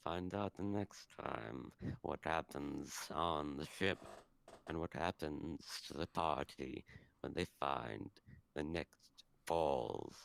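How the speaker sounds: very low, hushed, creepy bird-creature voice. Player redoing the episode cliffhanger at another speaker's request, bird voice. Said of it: "Do it in your bird voice".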